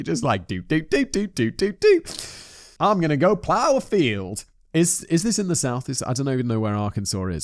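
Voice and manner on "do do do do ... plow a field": put-on Southern accent. Imitating the local public: stereotypical Southern accent. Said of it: "That's a super stereotypical accent".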